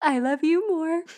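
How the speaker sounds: put-on high-pitched baby talk voice. Recapping a show where Ben talks on the phone to Bridget, Ben's baby talk. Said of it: "baby talking".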